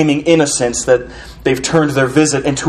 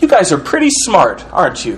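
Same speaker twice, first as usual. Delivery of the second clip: openly mocking, swooping sing-song; 4 semitones higher than usual. Explaining a man's shift in tone toward a group, the speaker acts out acting out a mocking tone. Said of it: "He's addressing them now with a mocking tone".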